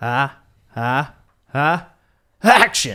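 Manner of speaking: very loud, slow, drawn-out high sneeze-shout. Doing an impression for the other speaker: Steven Spielberg sneezing impression. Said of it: "here's an impression of Steven Spielberg sneezing".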